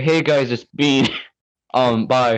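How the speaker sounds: put-on slow, drawn-out voice. Doing an impression of a friend to say goodbye: imitating a friend. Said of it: "I do a really good impression".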